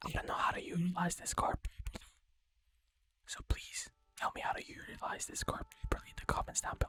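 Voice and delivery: soft ASMR-style voice. Asking viewers to explain a card in the comments, in an ASMR voice. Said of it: "I am using my A S M R voice".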